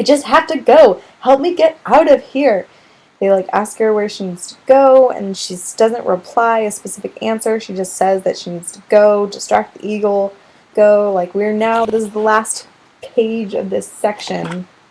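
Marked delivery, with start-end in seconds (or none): 0.0-2.7 shrill, raised, full-volume scream. Retelling a book scene where she screams at them: imitating a scream. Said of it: "she screams it".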